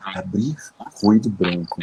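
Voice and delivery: whispered delivery. Retelling how they quietly asked a smart speaker: imitating own whisper. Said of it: "falei bem baixinho assim".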